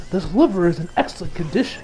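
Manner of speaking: ordinary delivery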